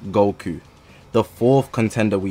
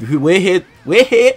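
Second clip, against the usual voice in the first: loud, high, stumbling stutter; 9 semitones higher, 5 dB louder than usual. Opening a video about choosing the best unit, stuttering. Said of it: "I'm stuttering 'cause it's crazy".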